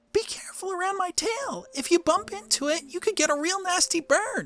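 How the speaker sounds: mock creature voice, very high. Trying out lines as Charmander, working on the voice: Charmander voice. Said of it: "how am I going to speak like this?".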